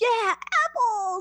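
mock, very high, loud, thrilled kid cheer. Retelling a trick-or-treater's reaction to snack apples: imitating an excited kid. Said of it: "was, like, so stoked".

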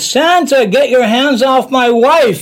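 put-on very high-pitched yell. Retelling what a man said at a Santa visit: imitating a man yelling.

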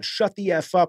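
angry, put-on screaming outburst. Retelling an actor's outburst at a high school matinee: imitating someone screaming. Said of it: "screamed out".

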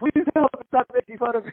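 high, acted, pleading beg. Retelling how a big guy begged the speaker, imitating someone begging. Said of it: "like begging me".

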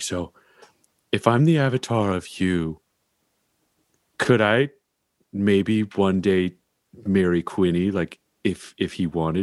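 soft whispering. Voicing a character asking a god a quiet question: whispering in character. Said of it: "a whisper in her ear kind of way".

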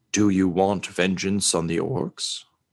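jumble of voices at once. Voices in the darkness speak to Marty, jumble of voices in multiple tones. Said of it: "Seeming to say with multiple tones".

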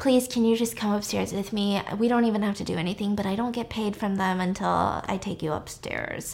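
imitated whisper. Retelling what a woman on Al's lap said to him, imitating a whisper. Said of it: "she sits down on his lap and she whispers".

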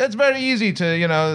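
weird German accent impression. Imitating the man being discussed, in a horrible weird German accent. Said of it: "that's a horrible impression".

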